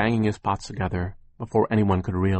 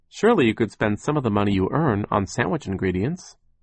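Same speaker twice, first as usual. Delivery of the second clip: usual speaking voice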